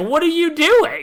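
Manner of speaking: very high, loud, shocked outcry. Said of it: "And Kay's like".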